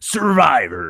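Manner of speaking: gritty, rough-edged voice. Imitating Jeff Probst saying the show name with some grit: imitating Jeff Probst's gritty new voice. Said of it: "he has a new voice?".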